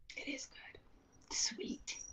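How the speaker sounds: barely audible, slow, drawn-out whisper. Answering a remark about the iced tea: whispering. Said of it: "Why did you whisper that?".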